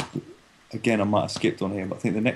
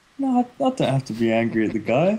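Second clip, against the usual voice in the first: put-on cheerful voice, smiling while talking; 3 semitones higher than usual. Retelling how a fighter said it, imitating someone smiling while talking. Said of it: "he was all smiling, he was like".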